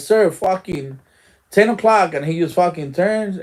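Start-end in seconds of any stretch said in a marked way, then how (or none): 0.0-2.1 urgent, hollered-out scream. Retelling a warning to the sir about two armed men: retelling a scream. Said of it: "when I screaming, like".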